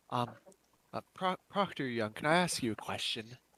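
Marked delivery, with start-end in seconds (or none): 1.1-3.2 low, hushed, stumbling whisper under the breath. Voicing a character who, after a handshake, asks the proctor something: low whisper. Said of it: "in a low whisper be like".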